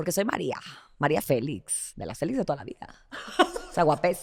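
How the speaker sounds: breathy, half-whispered voice. Answering a request to imitate María Félix: María Félix impression. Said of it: "imita a la doña".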